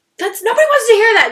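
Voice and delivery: very high, shrill, loud yelling. Recounting what the speaker yelled at their mom: retelling yelling at mom. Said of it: "I was just yelling at my mom".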